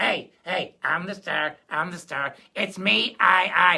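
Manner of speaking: loud, slow, boastful show-off little guy voice. Voicing a little guy during a lesson: boastful little guy voice. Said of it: "I got this little guy going".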